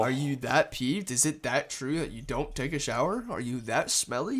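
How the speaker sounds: plain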